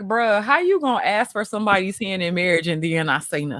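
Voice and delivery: ordinary talk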